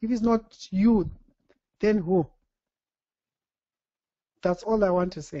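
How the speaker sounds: emotional voice, choking up. Speaker finishing their remarks after listening to another speaker, getting choked up. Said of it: "I'm getting choked up".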